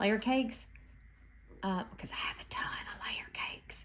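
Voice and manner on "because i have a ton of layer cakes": hushed whisper, very soft, barely above a breath. Explaining an idea, suddenly whispering without knowing why. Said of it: "I don't know why I'm whispering".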